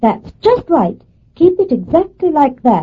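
high, loud, excited shout.

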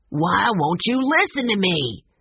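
heated, angry, insistent tone. A man behind a closed study door, angry, almost shouting. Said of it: "A man almost shouted".

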